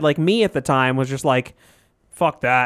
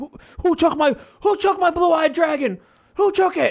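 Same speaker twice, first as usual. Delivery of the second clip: panicked, frantic, very high-pitched freakout; 12 semitones higher than usual. Retelling someone's outburst over a missing card, imitating someone freaking out. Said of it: "freaking out. He's like".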